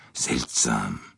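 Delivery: low murmur under the breath. Poirot, having turned away discreetly, murmurs. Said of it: "murmelte er".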